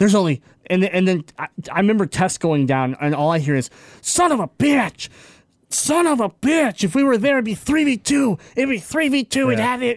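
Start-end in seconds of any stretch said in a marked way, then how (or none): 4.0-10.0 put-on furious cursing outburst, higher pitch. Retelling a teammate's outburst after dying in the circle: imitating someone furious at himself. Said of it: "he was so mad at himself".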